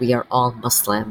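ordinary delivery

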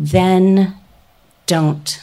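incredibly calm, steady, unwavering, low voice. Retelling how a woman leaned in and answered her, imitating a calm, steady voice. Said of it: "in this incredibly calm, steady voice".

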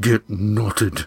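muttered through gritted teeth. A narrator reads a character's reply to a companion's advice: muttered through clenched teeth. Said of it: "muttered through clenched teeth".

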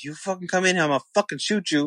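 mock angry, heated, half-yelled delivery. Retelling a man who was yelling at everyone: imitating a yelling man. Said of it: "who was obviously fucking yelling at everyone".

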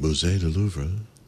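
low French announcer voice in metro announcement style. Recalling the woman's voice on the Paris announcements: Paris subway announcer voice. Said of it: "I always like the woman on the Paris stuff. She's like".

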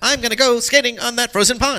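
put-on very high, loud, old-fashioned old-timey voice. Showing how a past voice actor sounded without pitch processing: Ben Hardaway's unpitched voice. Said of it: "He kinda sounded like this all the time".

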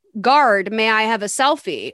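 ordinary delivery

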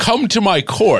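funny, very high, mighty, royal king voice. Pressed to do it, the speaker gives a taste of the king character: mighty royal king voice. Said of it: "a very funny, mighty king type".

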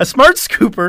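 giggly, barely held together, laughing through words. Describing a product feature name, laughing while talking. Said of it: "I can't say it without laughing".

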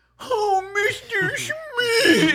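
weird, very high pet-talk voice. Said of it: "It's like this weird".

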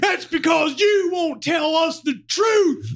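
very high, slow, shrill, drawn-out screaming. Retelling a passenger at the desk during a flight delay, retelling a man screaming. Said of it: "And he was screaming".

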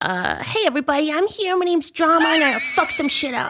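very high, incredibly aggressive cartoon critter voice, hit hard. Asked to invent a voice for the animal Drama, doing an aggressive Drama animal voice. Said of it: "so can you do one for drama?".

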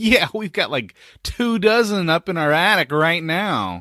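loud, high, dripping sarcasm laid on thick. Acting out a joking answer given at the door: dripping with sarcasm. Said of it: "really dripping with sarcasm".

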